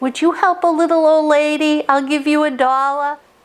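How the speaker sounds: put-on high, little old Italian lady accent. Retelling what an old woman said to passing guys, little old italian accent. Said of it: "in her own uh, little old Italian accent".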